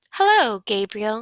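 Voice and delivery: soft, lilting sing-song. Reading a story where a girl greets a sleeping baby: sing-song voice. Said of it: "she said in a sing-song voice".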